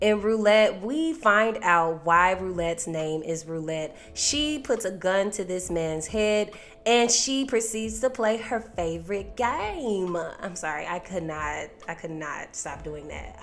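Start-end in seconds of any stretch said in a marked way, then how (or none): 8.4-10.1 exaggerated country accent with game drawn out. Recapping a show, speaker says a phrase in an exaggerated country accent. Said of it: "Her favorite game in the most country voice".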